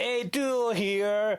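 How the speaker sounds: put-on casual, tossed-off American accent. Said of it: "he has a very American accent".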